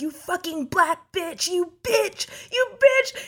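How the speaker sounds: put-on, furious, high, climbing scream. Telling a story, quoting a homeless man who yelled at them on a walk, retelling a man's screaming. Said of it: "He's like screaming at me".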